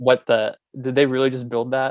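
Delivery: ordinary delivery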